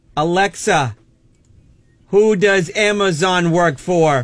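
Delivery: deliberately slow delivery. Showing someone how to ask the voice assistant, saying it slower. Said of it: "you got to say it a little slower".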